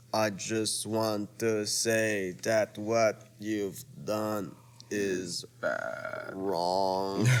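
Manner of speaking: very slow, low, dragged-out drawl. Speaker retelling a man on painkillers taking on Jeff: imitating slow drugged speech. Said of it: "very talking, very slow".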